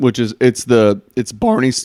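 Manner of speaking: voice cracks on a word. Telling a co-host about his investing app, voice cracking. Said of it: "my voice cracked?".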